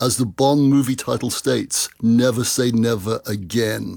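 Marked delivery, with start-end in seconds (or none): none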